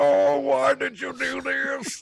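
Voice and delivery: very high, slow, squeaky, rasping, creaky, dragged-out put-on voice. Repeating the line after being asked to: put-on butthole voice. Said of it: "Can you do your butthole?".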